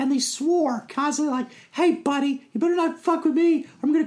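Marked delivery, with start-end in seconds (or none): 1.7-4.1 tiny, squeaky, very high-pitched voice. Speaker recalling enemy NPCs he played in D&D, Vorpal Pixie voice. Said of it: "they talked like really high".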